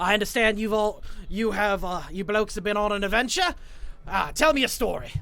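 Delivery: put-on Australian accent. Playing a character addressing the group, in an Australian accent. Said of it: "I have an Australian accent".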